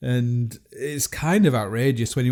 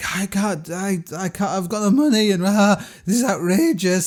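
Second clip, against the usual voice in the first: put-on meltdown, much higher, slower; 8 semitones higher than usual. Telling of travelers charged for heavy bags, imitating someone losing it. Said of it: "people start like losing it".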